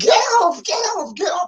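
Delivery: put-on very high, shrill, frantic, flailing shriek. Retelling being stuck in the air on a seesaw: imitating own scream. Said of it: "flailing in the air screaming".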